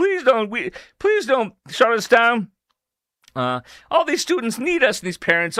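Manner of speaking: put-on begging tone. Mocking a school threatened with closure, mock begging. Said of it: "was begging".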